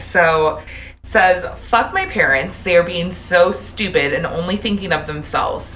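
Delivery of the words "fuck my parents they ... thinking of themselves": sassy delivery, slightly raised voice. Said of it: "I love your sassy voice".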